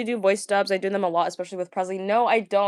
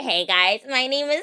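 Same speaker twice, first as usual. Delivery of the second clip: slow, mocking put-on voice; 4 semitones higher than usual. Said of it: "So I'm like".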